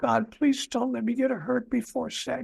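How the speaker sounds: mock crying prayer. Retelling a childhood bedtime prayer to God: imitating crying while praying. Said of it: "And I'm crying".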